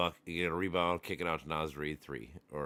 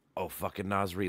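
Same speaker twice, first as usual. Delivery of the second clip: live game commentary voice, higher; 3 semitones higher than usual. Retelling reacting to a basketball game at halftime: imitating own game commentary. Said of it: "I just basically make my commentary".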